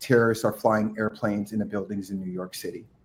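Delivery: hushed, soft, half-whispered voice. Retelling what a lady said after hanging up the phone: imitating a half-whisper. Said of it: "she just kinda whispers".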